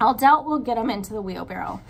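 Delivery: plain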